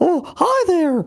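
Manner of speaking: very high, little cartoon-style voice. Answering a request to do impressions: Mickey Mouse voice. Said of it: "Can you do Mickey Mouse?".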